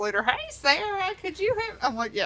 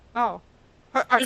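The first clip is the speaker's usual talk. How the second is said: put-on stuttering voice, louder; 4 dB louder than usual. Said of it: "he had a stutter".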